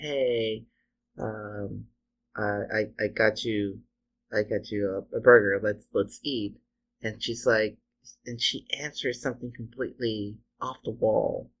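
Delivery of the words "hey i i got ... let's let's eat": ordinary delivery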